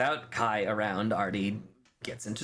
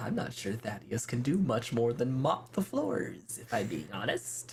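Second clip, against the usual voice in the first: confiding, just-between-us confidential tone. A character in a roleplay scene leans in and speaks in a lowered voice. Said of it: "he kind of just lowers his voice and leans in".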